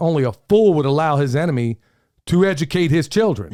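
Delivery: ordinary delivery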